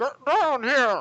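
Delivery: weird, odd-sounding, loud, high-pitched voice. Voicing a blob creature calling the characters down: weird voice. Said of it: "you hear this weird voice".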